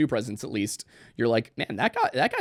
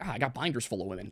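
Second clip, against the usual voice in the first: sarcastic tone, quieter; 8 dB quieter than usual. Retelling what Romney said about female cabinet picks: sarcastic Mitt Romney impression. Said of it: "kind of sarcastically".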